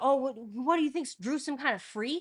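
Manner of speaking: loud, scolding shout. Retelling a parent yelling over a kitchen table argument: imitating dad yelling. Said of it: "actually yelling at me like I'm in trouble".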